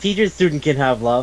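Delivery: ordinary delivery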